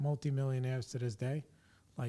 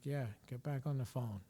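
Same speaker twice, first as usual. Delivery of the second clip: put-on nonchalant tone, quieter; 6 dB quieter than usual. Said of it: "very nonchalant".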